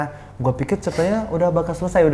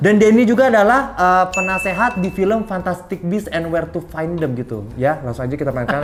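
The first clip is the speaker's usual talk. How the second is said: usual speaking voice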